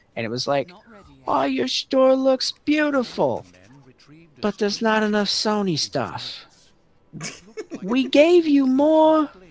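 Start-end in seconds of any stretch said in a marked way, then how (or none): 1.2-9.2 put-on New York City accent.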